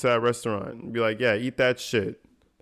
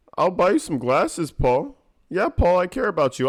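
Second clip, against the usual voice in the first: mocking, put-on fake-friendly voice, higher; 6 semitones higher, 3 dB louder than usual. Mocking Randy's fakeness toward Paul: imitating Randy's fake-friendly tone. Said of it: "I hate the fakery".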